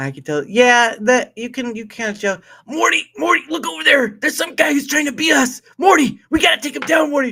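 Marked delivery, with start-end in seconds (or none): 2.7-7.3 very high, loud, fast cartoon scientist voice. Speaker improvises a scene after naming the show, doing a Rick impression. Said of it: "You might have missed your calling".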